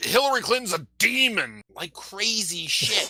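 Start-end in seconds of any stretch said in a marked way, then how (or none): 0.0-1.6 loud, high, crazed, unhinged voice. Joking about attracting conspiracy theorists, doing an Alex Jones impression. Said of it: "Alex Jones was all like".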